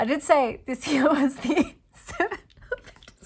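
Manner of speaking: laughing through words. Looking back at an earlier prediction while drawing a card, laughing while talking. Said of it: "I'm just laughing".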